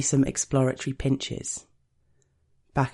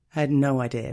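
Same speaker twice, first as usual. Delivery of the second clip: ordinary delivery, nothing marked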